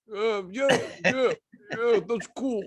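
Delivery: imitated breath-held talking. Describing their habit, the speaker shows it: retelling talking with held breath. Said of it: "I just hold my breath and talk like this".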